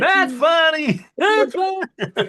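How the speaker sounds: mock laughter through the words, very high, slow, drawn out. Retelling how someone kept laughing while being whipped: imitating someone laughing while talking. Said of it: "T J's still laughing, going".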